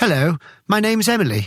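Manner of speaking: put-on posh English accent. Retelling a woman in a remote village introducing herself, in Emily's posh English accent. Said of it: "in a perfectly posh English accent said".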